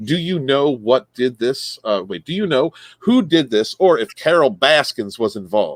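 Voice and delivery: normal talking voice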